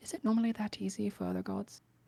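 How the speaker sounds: hushed, soft half-whisper under the breath. Voicing a character leaning over to ask another quietly: half-whispering under his breath. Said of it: "just whispers under his breath".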